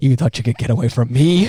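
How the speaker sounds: acted whispering. Voicing Godzilla taunting Mechagodzilla in his ear: put-on whisper as Godzilla. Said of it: "whispering in his ear".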